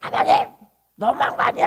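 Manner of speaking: hissed, accusing anger.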